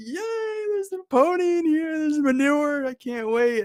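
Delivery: very high, overjoyed, gleeful cheering delight. Retelling a story where a son happily finds manure: acting out a joyous son. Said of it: "he's just, like, doing it up".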